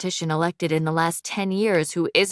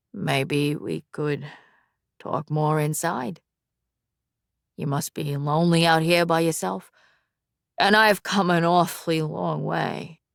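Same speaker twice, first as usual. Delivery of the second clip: charming, smooth-talking seductive voice. Reading a story where a character leans on a doorframe: seductive voice. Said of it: "in his most seductive voice he says".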